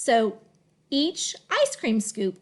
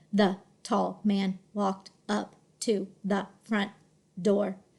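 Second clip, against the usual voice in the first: flat robotic monotone, read word by word; 3 semitones lower than usual. Showing learners how a robot would read a sentence: robotic word-by-word reading. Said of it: "if I was a robot, I might say".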